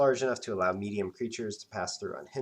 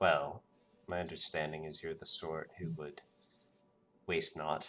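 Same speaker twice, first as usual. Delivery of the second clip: low, dropped speaking voice, not a whisper; 5 semitones lower, 3 dB quieter than usual. Game narrator voicing a character who answers the player's question; low voice. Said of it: "says in kind of a, a a low voice, but not a whisper".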